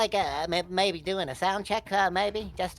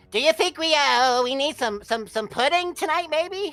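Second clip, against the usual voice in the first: put-on meek boy voice, higher and louder; 8 semitones higher, 6 dB louder than usual. Doing a sound check in a Butters voice before play. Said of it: "when I talk like this in the grocery store".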